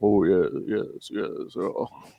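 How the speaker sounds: very slow, lingering, drawn-out broadcast-style voice. Imitating a fellow podcaster's admired voice: imitating Justin's voice. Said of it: "I'm so jealous of Justin's voice".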